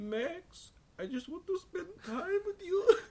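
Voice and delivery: very high, silly cartoon voice. Chatting about the Goofy movie, the speaker acts out a line to Max in a Goofy voice. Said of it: "did you ever watch the Goofy movie and he's like".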